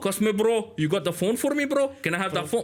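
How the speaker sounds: put-on Brummie street-guy Birmingham accent. Joking about regional accents, picturing being robbed: imitating a Birmingham accent. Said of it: "a guy with an accent like that".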